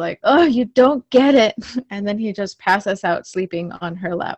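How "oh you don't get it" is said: loud, high frustrated outburst. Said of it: "But [name] gets frustrated".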